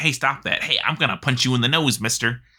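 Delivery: irritated, annoyed delivery. Quoting a character's line when he is clicked repeatedly: imitating Darius's irritated voice line. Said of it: "One of Darius's irritated voice lines".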